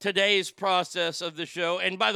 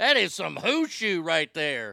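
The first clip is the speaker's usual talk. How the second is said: swooping southern drawl and twang; 3 semitones lower than usual. Joking about the Chinese word of the day: southern twang. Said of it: "I like it with the southern twang".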